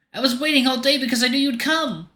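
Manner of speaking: small, timid, very high-pitched voice. Thony, hugging the listener and still crying, speaks in his small, timid voice. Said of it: "His small voice is abnormally timid and guarded".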